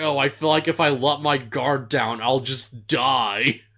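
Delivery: plain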